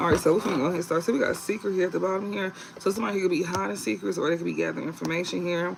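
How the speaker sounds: fast, rattled-off reading voice. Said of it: "when I'm in the readings, I talk loud".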